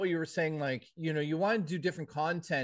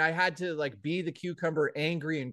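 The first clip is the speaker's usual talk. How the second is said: plain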